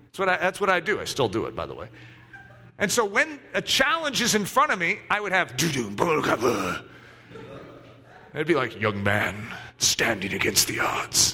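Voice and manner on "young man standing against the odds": deep bassy trailer narrator voice, much lower. Describing the narration he imagines when facing a challenge, deep bassy movie-guy voice. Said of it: "that deep, bassy movie guy voice".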